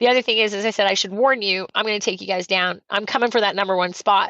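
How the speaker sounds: usual speaking voice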